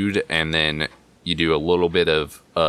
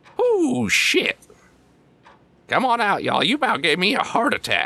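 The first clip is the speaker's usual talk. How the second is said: startled, high outburst with pitch swooping all over. Voicing a character who lowers a rifle, startled: voicing Buzzwhip, startled. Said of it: "he lowers the rifle and goes".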